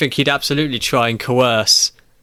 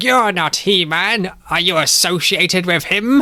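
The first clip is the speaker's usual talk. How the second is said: high, slow, drawn-out cartoon-villain voice; 6 semitones higher than usual. Voicing Skeletor in a role-played scene, in Skeletor voice. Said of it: "I'm going to try and do this voice all the way through".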